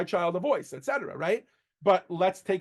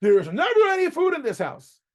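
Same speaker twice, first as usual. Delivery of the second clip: put-on very high, shrill, loud child's scream; 10 semitones higher, 6 dB louder than usual. Showing how a child talks to a parent without respect, screaming like a child. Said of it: "You don't scream".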